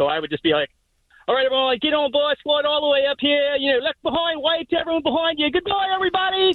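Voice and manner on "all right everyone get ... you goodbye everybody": put-on Australian accent, pitched up. Recalling bored late shifts greeting Jungle Cruise riders, in an Australian accent. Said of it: "I would just start an Australian accent".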